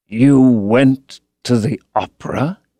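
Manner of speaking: strained, hurt tone. Reading a novel aloud, voicing Hallward's question: slow, pained voice. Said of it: "speaking very slowly, and with a strained touch of pain in his voice".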